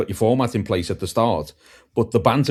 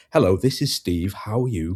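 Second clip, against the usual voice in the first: polished, formal, put-on phone voice; 3 semitones lower than usual. Recalling answering the phone and talking in a put-on formal phone voice. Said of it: "I was talking in my phone voice".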